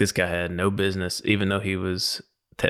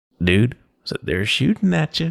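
mock patronizing kindergarten-teacher tone, loud and pitched up; 5 semitones higher, 6 dB louder than usual. Retelling what he said to a man who spent his career in a tank, mock condescending talk-down voice. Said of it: "like talking down to a kindergartner voice".

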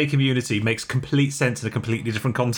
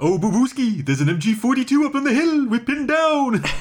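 very high cartoon bear character voice; 9 semitones higher than usual. Improvising wartime battle lines as a joke, in Yogi Bear voice. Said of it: "to say in Yogi's voice".

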